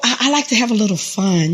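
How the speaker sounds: plain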